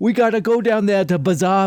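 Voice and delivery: exaggerated, bad fake Boston accent. Mocking how she attempts a boston accent this season, exaggerated fake boston accent. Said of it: "She thinks she's doing a Boston accent, but she's like".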